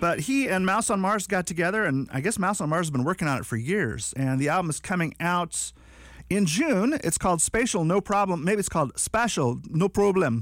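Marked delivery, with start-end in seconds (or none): 8.4-10.4 clumsy, badly done put-on Jamaican accent. Speaker announcing an album title, says it in a terrible put-on accent. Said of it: "That was a terrible accent".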